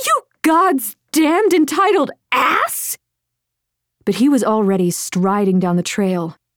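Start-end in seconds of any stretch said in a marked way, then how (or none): 0.0-3.0 shrill scream pitched very high. Reading a story, she scrambles up from the stream and screams at him: screaming. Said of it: "she gasped in a breath and then screamed".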